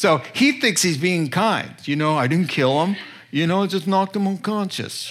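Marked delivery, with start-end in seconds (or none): 2.2-5.1 put-on New York accent. Imitating a robber who thinks he is being kind: new york accent. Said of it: "I go into my New York accent".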